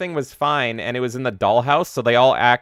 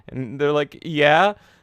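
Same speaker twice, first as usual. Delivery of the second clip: normal talking voice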